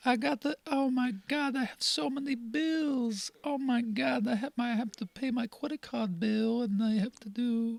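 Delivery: put-on made-up, very high-pitched, slow child voice. Talking like a kid about adult chores: made-up kid voice. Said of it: "that was just a voice I made up".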